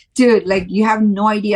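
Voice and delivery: ordinary delivery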